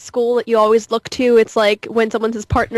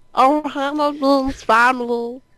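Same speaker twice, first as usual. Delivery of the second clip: animated cartoon alien creature voice; 3 semitones higher than usual. Showing an interviewer a voice he does, Stitch voice. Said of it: "I I do a good Stitch voice".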